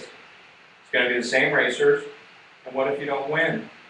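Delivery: ordinary delivery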